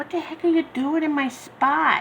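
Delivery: high, angry, grumpy little hamster voice. Showing off his daughter's hamster and voicing what it says: mock-angry hamster voice. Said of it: "he's so mad".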